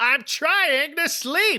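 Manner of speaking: put-on irritated yell, very high and drawn-out. Recapping a scene for the others, retelling Lillian's annoyed shout. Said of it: "Lillian shouts".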